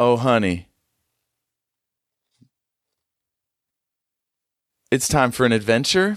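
rising question-like intonation on "adventure". Answering where they're going: ending on a question. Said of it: "she says, with a question mark on the end of it".

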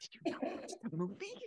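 unvoiced, hushed whisper under the breath.

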